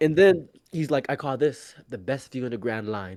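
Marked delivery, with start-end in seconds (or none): 1.1-3.2 put-on British accent, lower and quieter. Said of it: "in his, you know, British accent".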